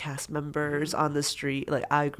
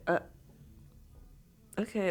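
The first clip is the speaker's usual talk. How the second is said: play-acted breathy half-whisper, thoroughly unimpressed; 5 semitones higher, 4 dB quieter than usual. Retelling a call about a first salary, imitating unimpressed mom. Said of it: "very unimpressed".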